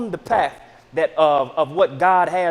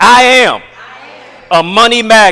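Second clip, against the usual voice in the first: very loud, forceful, emphatic delivery; 4 semitones higher, 13 dB louder than usual. Speaker leads the audience in an affirmation, saying it like they mean it. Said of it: "say it like you mean it".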